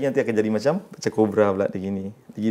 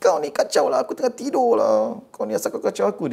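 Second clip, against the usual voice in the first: put-on very high-pitched old granny crone's voice; 11 semitones higher than usual. Retelling a conversation, the speaker voices what the other one said: old granny voice. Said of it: "Suara nenek tua".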